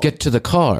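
fake British-accented machine voice. Quoting the talking car from the show: Kit voice with British accent. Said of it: "why did Kit have a British accent?".

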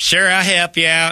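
put-on hillbilly voice. Showing how to answer someone asking for help: ignorant hillbilly voice. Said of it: "with that voice".

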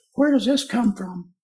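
high squeaky high-pitched voice. Asking the mouth of the Amazon where it comes from, high-pitched voice. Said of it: "You'd have to say in that tone of voice, ... how high-pitched the voices of fish are".

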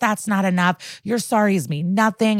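mock screaming. Retelling a scene, voicing a man screaming at a woman: imitating someone screaming. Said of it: "He is screaming at Mia".

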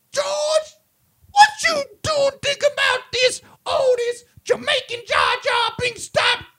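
play-acted very high, shrill shrieking voice. Retelling a story, the speaker voices a wife asking her husband a question, screaming wife impression.

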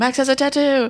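shrill, high, screamed and blurted out. Recalling the year Grandma was fussing at [name], retelling a scream. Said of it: "So I screamed out".

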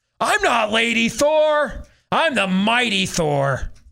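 screamed out very slow, high and drawn-out. Retelling a movie scene where the villain calls her Lady Thor: imitating Jane Foster screaming. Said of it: "she screams out".

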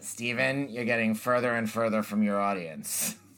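grandfather's way of speaking. Recounting a line their grandfather loved to quote, speaker imitates grandfather's voice. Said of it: "I can only do it in my grandfather's voice".

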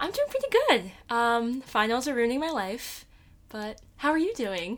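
lilting, animated sing-song. Answering a co-host's question about how you're doing, smiling while speaking. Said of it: "You said that with such a smile on your face".

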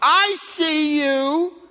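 acted, booming, full-throated, very high shout. Retelling how a mom stood up in the stands to shout, retelling a booming shout. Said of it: "She had one of these booming voices. And she would shout".

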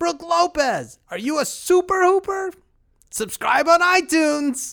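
very high, loud shouted yell. Acting out a paid fan at a game: pretend yelling from the stands. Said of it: "just yell out about the Super Hoopers".

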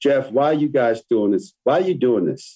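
heavily sarcastic, challenging tone. Retelling a journalist's question in an interview: imitating a sarcastic tone. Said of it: "in a very sarcastic tone".

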